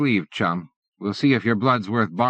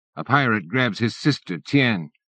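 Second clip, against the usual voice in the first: plain reading voice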